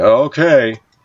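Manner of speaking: mocking, sarcastic. Retelling a man's reply about God providing: imitating a sarcastic reply. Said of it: "he laughed sarcastically".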